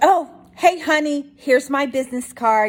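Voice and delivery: put-on thick New York accent. Retelling how Franny showed her husband her business card, in Franny's strong New York accent. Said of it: "Franny's got a strong New York accent".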